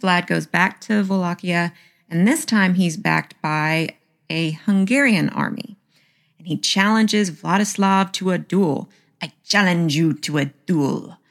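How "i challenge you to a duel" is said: put-on French-accented speech. Speaker retells Vlad challenging Vladislav to a duel, Vlad in a French accent. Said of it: "I have no idea why he's French all of a sudden".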